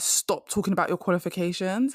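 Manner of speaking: normal talking voice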